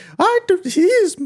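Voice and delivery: very high, loud silly voice. Retelling an actor's first line in a film: imitating Brendan Fraser. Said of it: "he stands up and he's just like".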